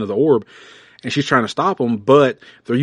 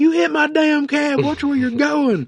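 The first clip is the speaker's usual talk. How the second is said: play-acted, very high-pitched yelling. Retelling a comic scene where a cab driver yells: imitating a yelling cab driver. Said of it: "the cab driver yells at him".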